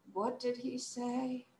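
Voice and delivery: barely audible, hushed, drawn-out, utterly bored. Demonstrating the practice line for listeners to copy, sounding bored. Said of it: "Sound bored".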